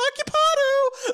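very high loud squeak, voice shot up octaves. Retelling someone yanking the occupied bathroom door, the speaker answers with a voice jumping way up. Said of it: "my voice goes up like five octaves".

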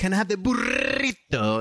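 exaggerated Spanish pronunciation of "burrito," high and swooping. Mocking non-spanish speakers ordering food: imitating overdone spanish pronunciation. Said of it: "pronounce something in Spanish, like how it's supposed".

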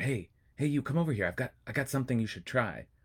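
furtive street-dealer whisper. Imagining the tempter from a Torah passage calling out, whispering like a corner drug dealer. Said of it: "whispering like a drug dealer on the corner".

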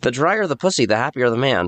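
pundit-style lecturing voice crossed with cartoon duck. Joking after being called Ben Shapiro: Ben Shapiro mixed with Daffy Duck. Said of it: "you sounded like Ben Shapiro mixed with Daffy Duck".

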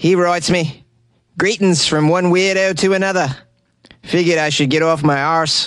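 fake Australian accent. Reading a listener's message from australia aloud: put-on australian accent. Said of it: "I need to stop this accent".

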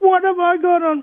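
acted, very high-pitched, shrill screaming outburst. Retelling a man screaming at the police who stopped him, acting out the scream. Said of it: "he jumped up and down and screamed".

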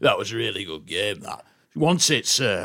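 mock big deep voice. Retelling how a confident lad in the showers talked: imitating a big deep voice. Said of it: "big deep voice like that".

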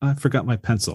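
put-on nonchalant delivery. Retelling a film scene, quoting Bender: imitating Bender's nonchalant line. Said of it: "It's just so nonchalant".

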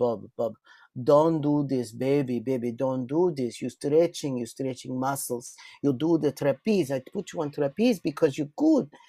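put-on thick, heavy Russian accent. Quoting the Russian Olympian who trained the speaker, in a thick Russian accent. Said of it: "She had this very thick accent".

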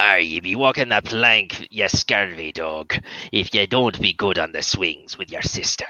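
low, swashbuckling put-on pirate voice. Recalling a bit done at the swings, in pirate voice. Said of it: "when I do a pirate voice".

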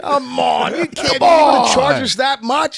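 yelling. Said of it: "yelling at Matt voice".

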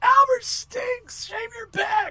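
put-on very high, eager, all-in jeering kid voice. Retelling heckling a wrestler again after encouragement: imitating an eager heckle. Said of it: "now I'm really into it".

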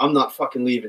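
ordinary talk

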